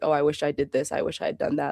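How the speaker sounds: ordinary talk, nothing marked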